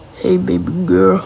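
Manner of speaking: bottomless, very low demon voice. Describing a demon who controls minds, the speaker imitates his insanely deep voice. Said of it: "he has an insanely deep voice".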